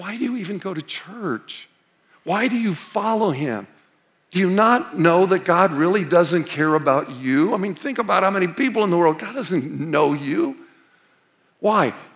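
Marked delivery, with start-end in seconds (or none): 0.0-7.5 put-on tempting whisper. Acting out what the enemy whispers in your ear: imitating Satan whispering. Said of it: "He's gonna whisper in your ear".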